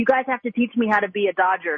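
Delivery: plain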